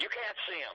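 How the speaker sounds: high, hoarse, rasping yell. Retelling a receptionist refusing a meeting: imitating a raspy yell. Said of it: "she yells at me. In this raspy voice".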